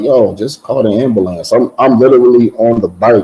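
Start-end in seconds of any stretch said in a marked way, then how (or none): none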